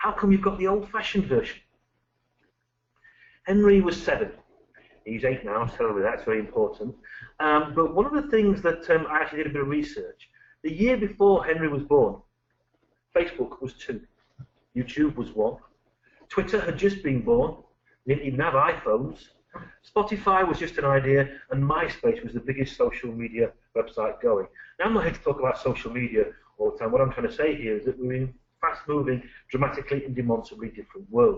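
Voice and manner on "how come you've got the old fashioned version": put-on indignant child's voice. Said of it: "very indignantly and said".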